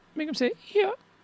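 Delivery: very high, squeaky, silly call-out.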